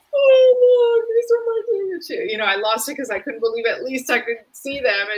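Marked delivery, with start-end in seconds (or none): 0.1-2.3 mock sobbing, very high, very loud bawling wail. Retelling showing pictures of her kids, imitating own bawling. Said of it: "I just started bawling".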